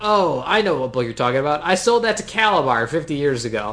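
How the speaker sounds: ordinary delivery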